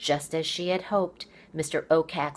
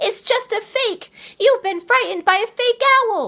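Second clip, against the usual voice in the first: very loud, very high, breathless, panting taunting voice; 8 dB louder than usual. Narrator reading Poppy's taunt to the owl, panting Poppy voice. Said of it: "owl and mouse, / She reached down and yanked the quill from her sash, / [name] panted between hard breathing".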